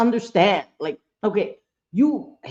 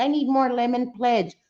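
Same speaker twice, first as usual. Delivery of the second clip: put-on cartoon lady voice; 3 semitones higher than usual. Explaining a Family Guy character, quoting her line: Consuela voice. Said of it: "the lady that used to be like".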